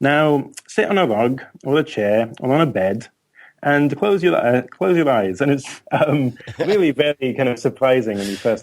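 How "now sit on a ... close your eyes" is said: put-on speaking with Midlands accent. Imitating a surprising voice telling listeners to sit and close their eyes, broad Midlands English accent. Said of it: "broad Midlands English accent saying".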